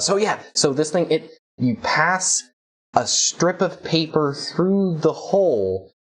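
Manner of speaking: high, super excited, eager chatter. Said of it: "and he says".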